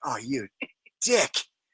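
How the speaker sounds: very low, under-the-breath mutter. Retelling their reaction to a man who yelled at them, re-enacting a mutter under breath. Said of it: "I said it kind of under my breath".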